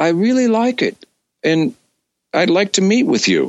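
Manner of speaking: very high-pitched, swooping way of talking. Act out Carl from Geffen responding to Richard's cassette tape, imitating Carl's very high voice. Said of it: "Carl has a very high voice".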